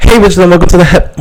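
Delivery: shouty, overblown, too-loud delivery. Podcast host opening the episode, finding themselves too loud. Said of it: "why do I sound so loud?".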